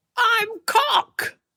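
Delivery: very high puppet-show voice. Playing the puppet in a suggested puppet show: voicing a penis puppet. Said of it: "a puppet show with the dick".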